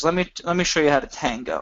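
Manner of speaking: ordinary talk, nothing marked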